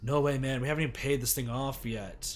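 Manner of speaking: plain reading voice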